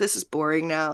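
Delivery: put-on bored, fed-up voice. Retelling how Meg acts once the jig is up: imitating Meg being over it. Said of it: "Meg just being like".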